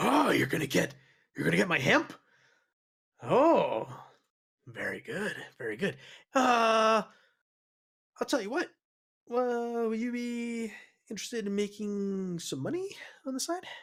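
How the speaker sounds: put-on intoxicated man's voice. In an actual-play game, the narrator voices an intoxicated character, playing a drunk man. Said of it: "Yeah, he's very intoxicated. / Yeah, he's very intoxicated".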